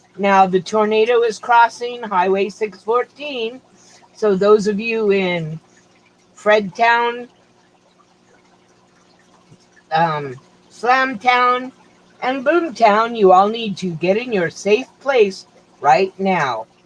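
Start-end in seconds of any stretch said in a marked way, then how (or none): none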